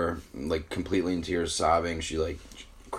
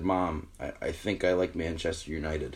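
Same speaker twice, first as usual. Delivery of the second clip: mock-tearful voice, quieter and slower; 4 dB quieter than usual. Retelling answering mom's question with tears in the eyes; imitating a tearful confession. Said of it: "tears in my eyes".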